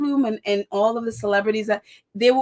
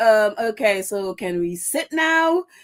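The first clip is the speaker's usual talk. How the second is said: mock very slow, dry sarcastic drawl. Retelling a president's words after a meeting: imitating sarcastic tone. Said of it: "he just was so sarcastic the whole way".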